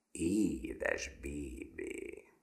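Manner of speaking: satisfied growling. Narrator reads a character's pleased reaction at the table, contented growl. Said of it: "elégedetten morogta".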